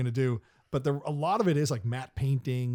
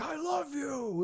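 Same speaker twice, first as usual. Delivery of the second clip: put-on boisterous scream, higher; 14 semitones higher, 4 dB quieter than usual. Retelling a movie scene, imitating Chris Farley's boisterous scream. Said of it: "screams in that very boisterous Chris Farley way".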